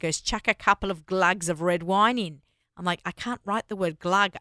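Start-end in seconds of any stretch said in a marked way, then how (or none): 0.2-2.4 put-on very thick Australian accent, laid on heavily. Quoting dad on adding red wine to bolognese: thick Australian accent. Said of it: "very thick Australian accent".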